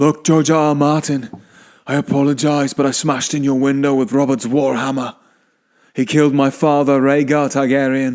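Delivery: put-on northern English accent. Asked to do his accent, the speaker plays it out: Jon Snow accent. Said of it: "Can you do his mm, accent, like how you'll speak to him?".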